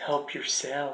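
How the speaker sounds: very quiet, hushed, cruel voice. Quoting what he said before the speaker ate it, mimicking a cruel voice. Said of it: "In a very cruel like voice".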